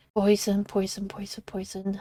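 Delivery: whispered, panicky muttering.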